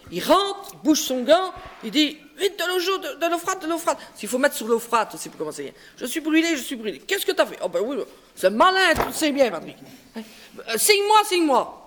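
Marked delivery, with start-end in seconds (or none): none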